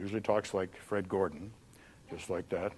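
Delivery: very deep, very soft, hushed, low speaking voice. Explaining personality types, demonstrating a kinesthetic person's deeper voice. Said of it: "a kinesthetic person usually has a deeper voice".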